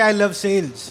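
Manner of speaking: ordinary talk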